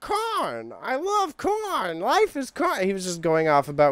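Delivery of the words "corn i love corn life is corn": put-on very high, swooping, dopey little-kid voice. Retelling a kid's looped TikTok interview, in a stupid kid voice. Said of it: "in this stupid kid voice".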